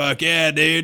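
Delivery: put-on casual, approving, beer-drinking dude-bro voice. Imagining a listener who holds a Bud Light, imitating a beer-drinking dude. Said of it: "a dude with a Bud Light and a koozie".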